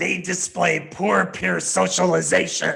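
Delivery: loud, ominous, frightening, scary voice. Reading the 'they' lines of a we-versus-they list, in a scary voice. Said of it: "read the they statements in a scary type of voice".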